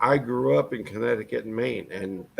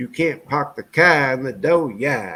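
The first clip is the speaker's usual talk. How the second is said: raised Down East Maine accent; 2 semitones higher, 5 dB louder than usual. Demonstrating after talk about Maine accents: Maine accent. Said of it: "This is a Maine accent".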